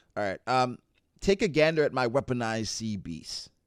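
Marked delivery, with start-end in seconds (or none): none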